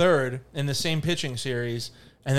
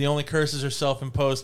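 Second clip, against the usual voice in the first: ordinary delivery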